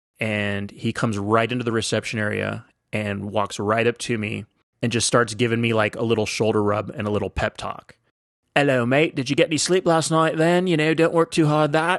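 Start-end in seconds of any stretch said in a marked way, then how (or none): 8.6-12.0 clumsy, bad put-on Liverpool accent, pitched up. American retells a man's pep talk at reception; attempted Liverpool accent. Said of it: "I can't do a, a Liverpool accent".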